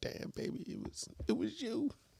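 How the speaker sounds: soft, whispered, pleading voice. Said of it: "you come crawling back like".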